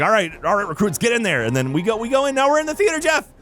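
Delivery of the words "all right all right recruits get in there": plain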